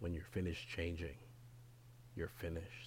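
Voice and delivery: grave, weighty, hushed whisper. Redoing a line, the speaker tries it again with more gravitas. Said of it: "with a little bit more gravitas".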